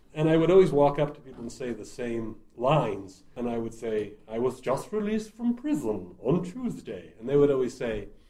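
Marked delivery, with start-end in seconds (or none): 4.4-7.2 put-on swooping old horror-film doctor voice. Retelling lines said to audience members while playing a doctor: Boris Karloff voice. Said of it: "doing a Boris Karloff impression".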